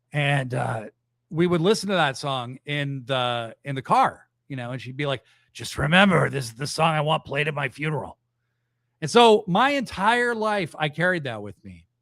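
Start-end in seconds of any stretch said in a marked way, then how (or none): 5.5-8.1 imitated wheezy, breathy old woman's voice. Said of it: "very emphysema voice".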